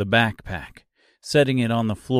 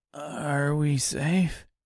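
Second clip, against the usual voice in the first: tired, soft, flat, groggy voice; 4 semitones higher, 5 dB quieter than usual. The Scarecrow, lying on the ground near the sobbing Dorothy, asks: tired, groggy voice. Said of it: "asked the Scarecrow in a tired, groggy voice".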